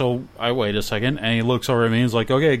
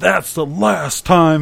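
slow, loud, drawn-out, rasping, rough yell; 6 semitones higher, 5 dB louder than usual. Retelling how a man turned on the driver: retelling a yell. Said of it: "he just starts yelling".

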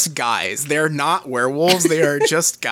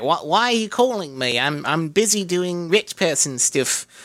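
put-on thick New Zealand accent, laid on; 3 semitones higher than usual. Retelling a show scene, voicing a rich woman taking a phone call: strong New Zealand accent. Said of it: "really strong like New Zealand accent who's like".

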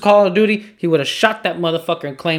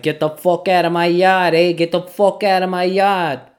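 put-on not-quite-right Boston or New York accent; 3 semitones higher than usual. Describing a video, quoting the yard owner in an imperfect new york or boston accent. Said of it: "I couldn't do the accent just right".

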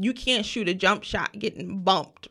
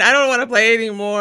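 put-on crying, much louder, faster; 9 dB louder than usual. Retelling being made to keep playing ball on the playground; imitating own past crying. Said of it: "so I'm like crying".

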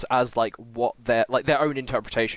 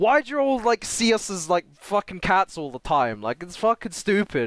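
high put-on Brooklyn accent; 7 semitones higher than usual. Retelling a scene where the cat character answers back, in a Brooklyn voice. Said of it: "in like a Brooklyn voice".

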